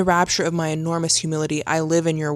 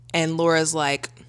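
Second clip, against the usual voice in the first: ordinary talk, nothing marked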